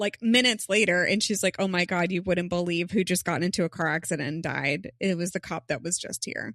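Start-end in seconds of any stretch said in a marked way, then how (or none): none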